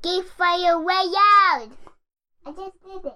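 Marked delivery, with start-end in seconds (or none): 0.0-1.7 very loud yelling, higher pitch. Saying the show's name after being asked: shouting real loud. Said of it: "real loud".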